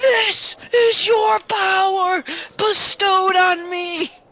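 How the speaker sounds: very loud, very high shrieking scream. Imagining the scene, the speaker acts out screaming into the heavens. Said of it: "you just see me screaming into the heavens".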